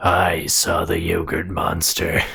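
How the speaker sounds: eerie, chilling, very low, slow, creeping drawl. Voicing an unseen figure who answers a question: chilling voice. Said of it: "a chilling voice stops you in your tracks".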